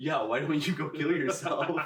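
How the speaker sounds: demonic character voice. Retelling a horror film scene to another speaker: retelling a demon voice. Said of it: "And the demon voice goes".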